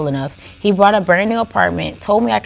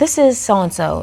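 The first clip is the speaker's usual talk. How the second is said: usual speaking voice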